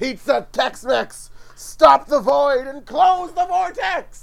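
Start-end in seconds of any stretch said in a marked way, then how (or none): 1.6-4.2 shouting, much higher and louder. During a roleplaying game, a player tries to close the time vortex, shouting. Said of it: "I can hear you shouting through the wall".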